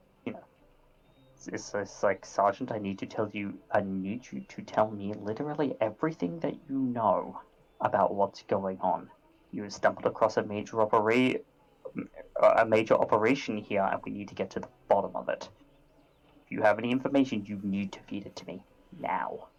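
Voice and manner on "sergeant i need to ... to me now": hushed, very soft voice. A player in character presses a sergeant for information, speaking very quietly. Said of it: "I'm going to start speaking very quietly".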